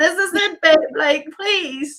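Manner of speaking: mock urgent begging cry, loud, high pleading scream. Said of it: "I was screaming at him".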